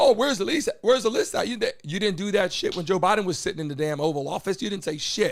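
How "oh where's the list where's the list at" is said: clamoring, higher-pitched, demanding yell. Mocking people who demand the list: imitating someone screaming. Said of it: "start screaming".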